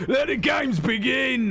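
loud drawn-out shouting.

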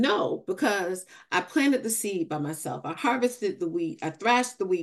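ordinary delivery

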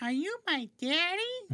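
put-on very high-pitched small child voice. Answering a question in a comedy bit, in a small child voice. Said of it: "His child voice is very, very good".

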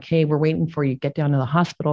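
ordinary talk, nothing marked

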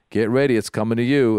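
normal talking voice

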